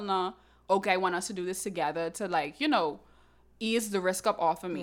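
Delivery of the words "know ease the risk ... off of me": normal talking voice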